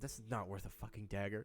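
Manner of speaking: low, soft mutter under the breath. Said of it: "mutter in your breath".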